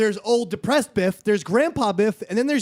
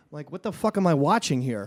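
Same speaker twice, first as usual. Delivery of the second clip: ordinary talk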